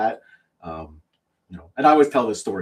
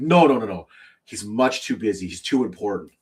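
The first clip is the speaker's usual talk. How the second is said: ordinary delivery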